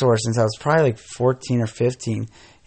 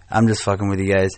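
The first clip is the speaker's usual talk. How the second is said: ordinary delivery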